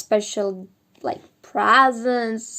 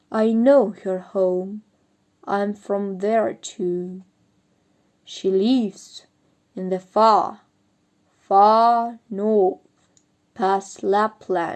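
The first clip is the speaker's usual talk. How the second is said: unhurried, slow, deep reindeer voice, far stretched. Narrator reads the reindeer's reply in a slow, deep voice. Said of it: "he said in a slow, deep voice".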